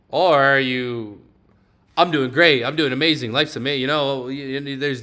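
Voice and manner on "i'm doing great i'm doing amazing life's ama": upbeat, enthusiastic, bursting with positive energy. Showing how a positive reply sounds at work: high, positive energy. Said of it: "different energies you can pretty much put on yourself".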